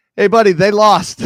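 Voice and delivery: loud, high-pitched yell.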